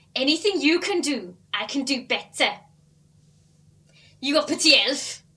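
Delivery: put-on Welsh accent. An actress asked for other accents tries a line in Welsh, Welsh accent. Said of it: "I could try Welsh".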